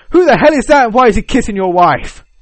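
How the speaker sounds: very loud, high, shrieking screaming outburst. Retelling a funny video moment, quoting someone: imitating someone screaming.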